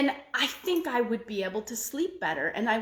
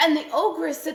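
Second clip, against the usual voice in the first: ordinary delivery, nothing marked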